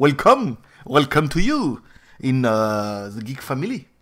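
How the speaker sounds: American-accented English, low-pitched and very slow. Welcoming new subscribers to the geek family, in an American accent. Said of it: "Mon accent américain qui reprend le dessus".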